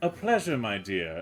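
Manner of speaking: put-on British accent. Voicing a well-dressed rat greeting a woman: British accent. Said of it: "He has a British accent".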